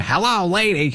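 mocking, heavily sarcastic yell. Telling how a friend yelled from his car window at careless pedestrians, retelling a sarcastic scream. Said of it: "he would roll the window down and scream".

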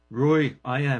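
put-on slow Liverpool accent. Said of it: "this Liverpudlian voice behind him says".

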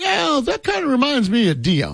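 bad put-on voice, high, swooping and sing-song. Retelling what an interviewee said: Barry Trammell impression. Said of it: "is my Barry Trammell".

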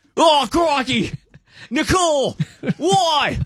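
put-on Australian accent, slow, high, stretched out. Reacting to a birthday post for an ex-wife: Crocodile Dundee voice. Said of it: "this is the voice they get".

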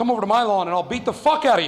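ordinary talk, nothing marked

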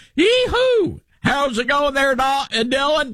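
very high, over-the-top exaggerated Southern drawl. Teasing Dylan about how Southern he sounds: imitating Dylan's Southern accent. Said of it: "I have a Southern accent, but he's like".

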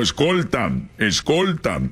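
plain

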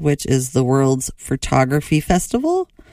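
festival lifted into rising, question-like intonation.

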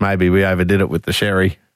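low, flat, nonchalant, offhand delivery.

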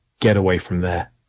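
normal talking voice

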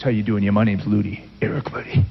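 deep, bass-heavy voice full of attitude. Describing his past self's attitude, introducing himself, deep bassy voice. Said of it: "I used to speak with a deep, bassy voice".

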